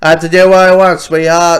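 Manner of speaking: put-on loud American vernacular dialect accent.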